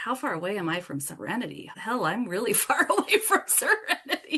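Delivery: words spoken while laughing.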